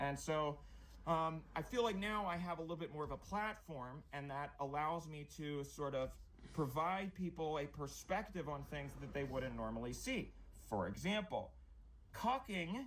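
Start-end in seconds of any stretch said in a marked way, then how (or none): 12.1-12.9 cucking said oddly, pitched high with rising tune. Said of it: "Bro, why did you say it like that?".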